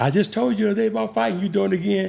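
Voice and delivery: harsh scolding voice. Retelling his father's words about fighting: imitating Pops scolding. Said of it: "Pops get up in the room and he say".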